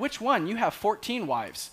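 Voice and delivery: put-on snide, rude, sarcastic tone, high voice. Retelling how Siri answered his request to call his wife, mocking Siri's sarcastic, rude voice. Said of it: "in just this sarcastic, rude voice".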